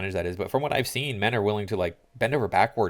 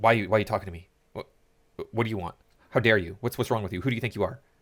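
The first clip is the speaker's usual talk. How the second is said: play-acted offended, affronted, fast indignant outburst. The speaker retells how women reacted when asked if they were mother and daughter; mock-indignant women. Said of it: "the women would be just like so like".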